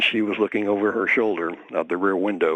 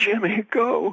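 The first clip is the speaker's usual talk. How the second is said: mock very high, terrified, urgent shriek. Retelling the girlfriend looking out the back window as the car peels out: imitating a girlfriend screaming.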